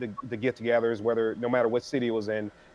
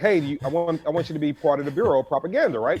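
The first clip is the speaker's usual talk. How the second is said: mild, half-hearted yelling tone; 3 semitones higher than usual. Retelling how someone used to yell at the speaker: imitating Roy yelling. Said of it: "he used to yell at me".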